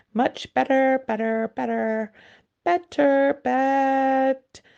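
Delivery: rising squeak ending in a sheep's bleat. Reading a story, the queen answers Alice, her voice rising to a squeak. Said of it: "her voice rising to a squeak".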